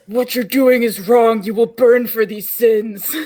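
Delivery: darkest, deep, angry, menacing threatening tone. A player voicing their character while glaring at the group, in a deep angry voice. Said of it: "in my deepest angriest brain voice".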